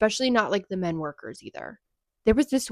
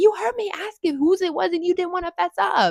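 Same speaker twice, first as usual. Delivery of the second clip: mock furious, high, angry screaming; 10 semitones higher, 4 dB louder than usual. Retelling the other girl screaming back while eating: imitating someone screaming. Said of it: "screaming at this girl".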